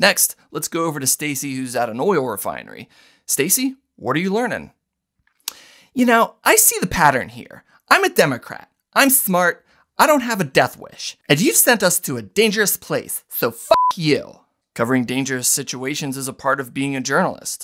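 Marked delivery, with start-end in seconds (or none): 5.9-14.4 snobbish, elitist reporter voice, high and swooping. In a news sketch, the anchor goes to a reporter at an oil refinery: elitist reporter character. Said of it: "[name], Senior Elitist Reporter".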